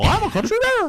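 very high, squeaky cartoon voice. Joking about Mickey Mouse joining the band as a country bear: Mickey Mouse voice. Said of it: "it's me, Mickey Mouse".

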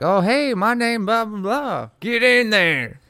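very high, loud put-on Southern accent. Guessing how the man who was in the wrong replied: imitating a man's accent. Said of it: "that was probably closer to his accent".

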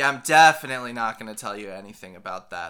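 loud, icy, cold and dismissive tone. Voicing a character who stares daggers at a questioner: icy, glaring reply. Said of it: "stares daggers into you, snakes, and just goes".

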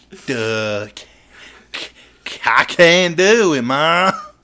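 very loud, dim-sounding put-on hillbilly stammer. Telling how a man answered a dare to read one page, quote him in a put-on hillbilly voice. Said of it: "don't know why I made him sound like a hillbilly".

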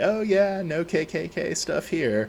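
put-on joking voice. Retelling an ex-girlfriend's remark to an old lady, imitating her jokingly. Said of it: "just said jokingly".

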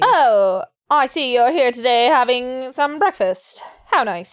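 put-on old-timey transatlantic accent, half British half American. Showing the old-timey accent between british and american: old-timey transatlantic accent. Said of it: "That is the definition of the transatlantic accent".

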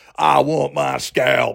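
slow, dumb, dopey Southern drawl. Imitating a movie role, mocking it: dumb Southern accent as Brad Pitt. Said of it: "he's just got the dumbest Southern accent you've ever heard".

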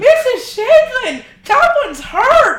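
put-on overdramatic shout. Retelling a sledding fall, imitating a friend's dramatic call for help. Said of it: "in the most dramatic way".

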